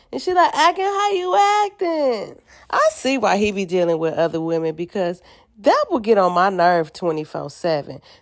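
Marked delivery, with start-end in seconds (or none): 0.5-2.4 put-on drunk slurring in a woman's voice, higher. Retelling a drunk woman grabbing his face: imitating Krishan slurring drunk. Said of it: "she's slurring her words".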